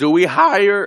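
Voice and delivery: high voice breaking, cracking. Discussing the Houston Texans' coaching search, voice cracking on a question. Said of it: "my voice cracked".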